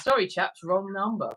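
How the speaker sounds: ordinary delivery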